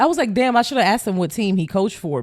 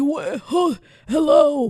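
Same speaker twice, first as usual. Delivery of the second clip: put-on feeble, frail, high old-man voice; 7 semitones higher than usual. Retelling being stopped by an old man on a coffee run, imitating an old man's voice. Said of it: "this is how he sounds like".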